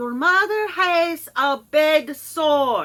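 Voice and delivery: heavy put-on Italian accent. Opening a video with a complaint rant, quoting a woman in a heavy Italian accent. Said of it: "Heavy Italian accent".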